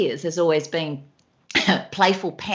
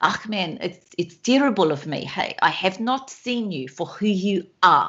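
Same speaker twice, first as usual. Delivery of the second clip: storytelling tone in a South African accent. Asked to please keep going, continuing in a South African accent. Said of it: "keep going with the South African accent".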